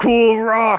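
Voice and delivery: triumphant battle cry, very high and loud.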